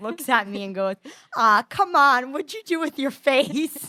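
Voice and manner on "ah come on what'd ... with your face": put-on broad, thick Boston accent, loud and drawn-out. Retelling a dad's reaction to a peeling face: imitating a thick boston accent. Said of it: "he has a thick Boston accent".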